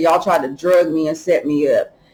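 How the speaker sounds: ordinary talk, nothing marked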